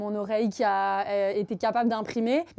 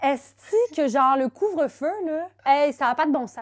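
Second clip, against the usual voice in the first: Canadian French accent from Quebec; 5 semitones higher, 5 dB louder than usual. After a Niçois accent, asked to do a Canadian one: Canadian French accent. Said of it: "suivi de l'accent canadien".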